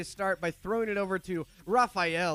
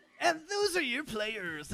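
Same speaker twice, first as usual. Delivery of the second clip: retro 1990s game show host delivery, higher; 7 semitones higher than usual. Introducing the players to the audience: 1990s game show host voice. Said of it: "I'm talking like a nineteen nineties game show host".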